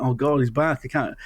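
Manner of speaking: usual speaking voice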